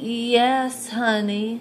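drowsy, half-awake, soft voice with drawn-out yes. Reading a story aloud, as the mother answers her son: sleepy voice. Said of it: "said in a sleepy voice".

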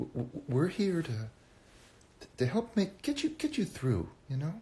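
halting stutter, very high and slow. Redoing an old bit as Richard on a call-in show: imitating own stuttering character. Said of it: "that stutter too".

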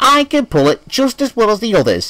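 very high, defiant voice. James answers back to the driver: defiant retort. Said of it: "James retorted defiantly".

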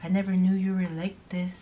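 soft, disappointed, let-down lecturing tone. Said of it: "kinda lecturing me".

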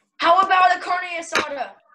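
shouted outright, high and loud. In a back-and-forth about tacos, suggesting an order to the other, yelling. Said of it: "Why are you yelling?".

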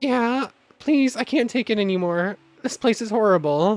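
high, fake, put-on begging. Playing along with a cover story: fake pleading. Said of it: "I need to play along".

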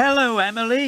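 cheerfully. Narrator reading a character greeting a friend who had run away: cheerful. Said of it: "whistled Whiff cheerfully".

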